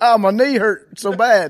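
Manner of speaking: put-on Southern drawl. Interviewer asking about Aaron Rodgers, doing Aaron Rodgers fake Southern accent. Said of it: "fake Southern accent thing".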